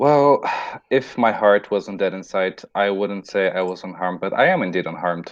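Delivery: plain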